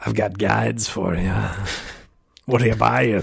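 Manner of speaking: rough, creaky edge to the voice. Riffing on a made-up guide character, the speaker does Resident Evil 4 Merchant impression. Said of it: "He's just becoming the merchant".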